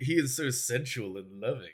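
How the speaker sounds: put-on sultry delivery. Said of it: "Why'd you just say it like that?".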